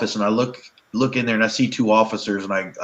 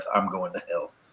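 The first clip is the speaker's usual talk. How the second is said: imitated muttering under breath, lower and quieter; 3 semitones lower, 9 dB quieter than usual. Retelling playing a villain to kids, imitating muttering under breath. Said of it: "muttering under my breath".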